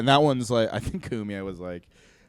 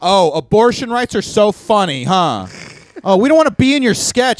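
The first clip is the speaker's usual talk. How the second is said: raised, high, dragged-out women's yelling; 9 semitones higher, 7 dB louder than usual. Retelling how women in a park yelled at him: imitating women yelling. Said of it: "started yelling at me".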